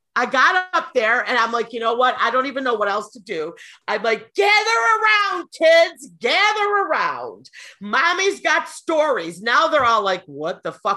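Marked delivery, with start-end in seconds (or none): 4.3-9.4 mock high, drawn-out screamed call. Recounting calling out to them into a microphone, retelling a scream. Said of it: "because I screamed it into the microphone".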